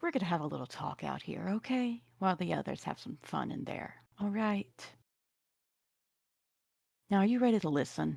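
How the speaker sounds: kind, soft, nice low voice. Quinn kneels down to speak to a man clutching his face, nice low voice. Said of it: "speak in a real nice, low voice".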